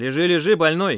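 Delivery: loud, severe, stern, commanding voice. The group leader walks up behind Pasha, who tries to get up; stern order. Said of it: "сурово приказал".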